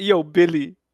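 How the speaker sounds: high-pitched, mock Brooklyn accent. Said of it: "a fucking Brooklyn Christopher Walken you're doing".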